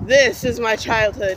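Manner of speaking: plain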